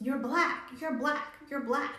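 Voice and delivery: high, goading, taunting yell, repeated over and over. Recounting what their sister started yelling out, retelling their sister's yell. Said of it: "my sister starts yelling out".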